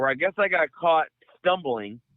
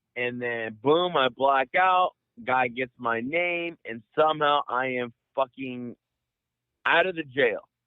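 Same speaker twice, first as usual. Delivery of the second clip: ordinary talk, nothing marked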